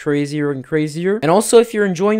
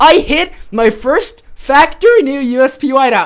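high, loud, thrilled voice cracking with excitement; 9 semitones higher, 5 dB louder than usual. Streamer reacting live to a big win, excited with voice cracking. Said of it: "My voice is cracking".

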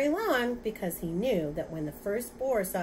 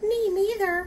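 tiny, very high little mouse voice; 12 semitones higher, 7 dB louder than usual. Reading a story, the mouse pipes up after the two boars speak, tiny little voice. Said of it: "said a tiny little voice".

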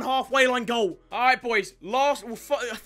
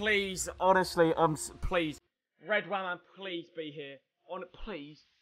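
nervous, anxious pleading, much quieter; 6 semitones lower, 7 dB quieter than usual. Saying a quick prayer to EA before a result appears, nervous pleading prayer. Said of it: "I'm going to say a quick prayer".

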